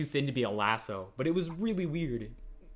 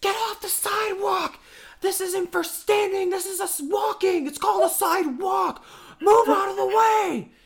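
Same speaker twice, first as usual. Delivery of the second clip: very high, shrill, loud screaming tirade; 7 dB louder than usual. Retelling a girl screaming at them while they wait for the bus, imitating a girl screaming. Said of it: "she's screaming at us".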